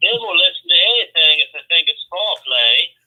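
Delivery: attempted Carolina accent. Quoting a movie line for a guessing game, attempted Carolina accent. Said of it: "trying to do your Carolina accent".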